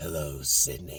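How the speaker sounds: very low, soft, hushed voice. Praising the voice actor, then quoting the killer's line; Ghostface voice. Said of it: "you do a great job with the Ghostface voice".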